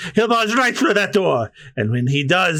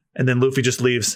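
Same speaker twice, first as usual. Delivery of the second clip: ordinary talk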